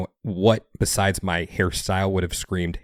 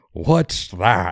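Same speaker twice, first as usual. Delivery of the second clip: imitated speaking with mouth full. Retelling a conversation, quoting her reply while imitating talking with mouth full. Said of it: "with the mouth full".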